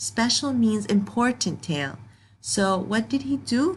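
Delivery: ordinary delivery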